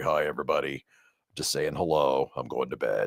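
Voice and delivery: very low, very quiet, soft, sick-sounding voice. Telling listeners about Abigail having the flu, imitating Abigail's low sick voice. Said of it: "Her voice is about like this low".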